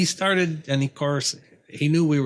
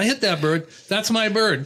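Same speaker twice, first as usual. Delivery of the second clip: mock breathless, out-of-breath speech, higher; 6 semitones higher than usual. Retelling what a hunter said on arriving: imitating someone out of breath. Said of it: "he's kinda out of breath".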